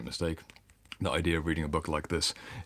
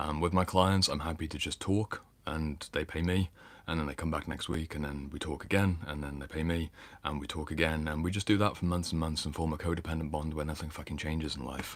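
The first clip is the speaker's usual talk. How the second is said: ordinary delivery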